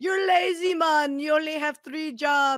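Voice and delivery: really bad, loud, high put-on Jamaican accent. Retelling teasing someone the way a nineties TV skit did, bad Jamaican Family accent. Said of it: "and I did a really bad accent".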